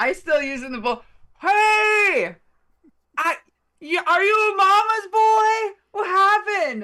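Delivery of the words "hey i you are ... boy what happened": very high, drawn-out, jeering taunting yell. Taunting someone in character to draw him away: yelling a taunt. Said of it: "but I start yelling again".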